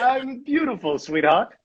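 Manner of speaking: put-on very high, old-timey, olden-time voice. Greeting a good friend, the speaker answers in an olden time voice. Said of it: "That's my olden time voice".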